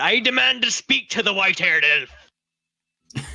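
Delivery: high, drawn-out shout at full volume. The character kicks the door open and calls out: yelling as loud as possible. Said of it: "I'm just going to yell out".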